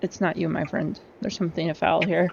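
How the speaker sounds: hushed, murmured, half-whispered stage whisper. Leaning toward Harum during the game, your character speaks to him: half-whispering. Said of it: "like whisper to him".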